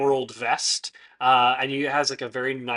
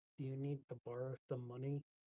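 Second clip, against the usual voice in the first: quietly muttered under the breath; 22 dB quieter than usual. Asking another character whether they need to borrow money: said under the breath. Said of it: "under my breath".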